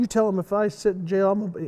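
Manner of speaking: imitated tough-guy voice. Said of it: "try to be tough guy".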